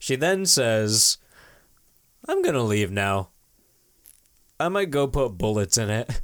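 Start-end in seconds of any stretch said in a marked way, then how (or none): 2.3-6.1 creepy, chilling, menacing-sounding delivery. Retelling the scene where Annie quietly threatens Paul: Annie monotone impression. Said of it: "'cause she's so monotone".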